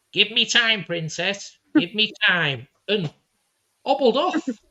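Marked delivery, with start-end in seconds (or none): 0.2-2.7 put-on little old man voice, pitched up. Telling a family story and repeating what he said: imitating a little old man. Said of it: "just like a little old man".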